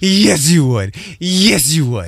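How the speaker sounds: pet talk voice, as for a dog. Asking to be spoken to like a dog, then showing it: talking-to-a-dog voice. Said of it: "Talk to me like you would talk to your dog".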